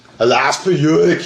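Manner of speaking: put-on Austrian accent. Answering a request to hear Arnold say the line: Arnold Schwarzenegger Austrian accent. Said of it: "I would like to hear him in his Austrian accent say".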